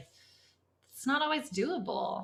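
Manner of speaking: starting to cry. Talking about pressures on a family trip to Hawaii, starting to cry. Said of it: "now I'm gonna cry".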